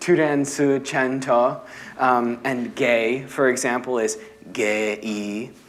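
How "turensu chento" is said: Korean-accented pronunciation. Showing how 'transgender' sounds when said in korean: korean accent. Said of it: "said in a Korean accent".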